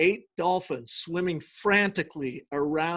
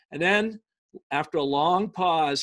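plain

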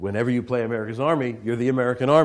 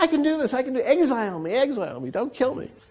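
mock yelling, very high-pitched and urgent; 14 semitones higher than usual. Retelling own reaction at the end of a game: imitating own past shouting. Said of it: "I'm shouting".

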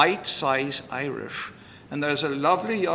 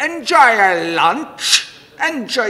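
very loud, drawn-out, harsh Irish brogue; 8 semitones higher, 11 dB louder than usual. Imitating how a hostess spoke to guests, in a harsh Irish accent. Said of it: "she had a very harsh Irish accent".

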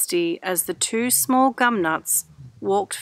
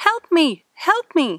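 weak, faint, far-off call, high and slow; 9 semitones higher, 4 dB louder than usual. Reading a story: a voice calls to the friends from the bushes, faint call for help. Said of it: "heard a faint voice calling".

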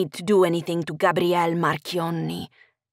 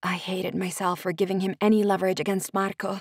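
ordinary delivery

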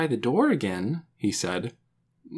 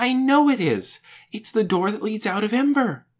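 high, eager, excited, certain outburst; 6 semitones higher, 4 dB louder than usual. Narrator reading a character's reply in a story, crying out. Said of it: "Lena cried".

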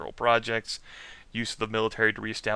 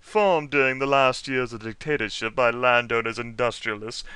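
put-on haughty, snooty, stuck-up voice; 4 dB louder than usual. Reading a passage about a political party aloud: put-on snooty voice. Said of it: "I can pull out a snooty voice for this".

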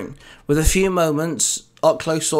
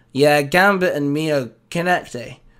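plain reading voice

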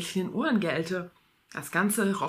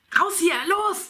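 yelled, very high-pitched and shrill; 11 semitones higher, 4 dB louder than usual. The narrator, with two young men arriving, shouting to the others. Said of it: "schrie ich den anderen zu".

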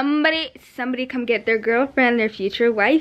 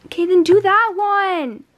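full-on high, drawn-out yell; 7 semitones higher, 4 dB louder than usual. Telling another speaker which bag to take, yelling. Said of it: "Why are you yelling at me?".

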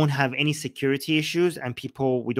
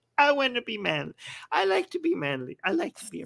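over-the-top very high, swooping feminine voice; 10 semitones higher, 3 dB quieter than usual. Joking with others about a manly clap, in the most feminine way possible. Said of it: "Saying that in the most feminine way possible".

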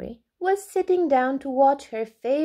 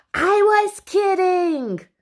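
all-out shrill, loud screaming outburst; 7 semitones higher, 6 dB louder than usual. Answering another character's question, screamed. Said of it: "screamed Mary".

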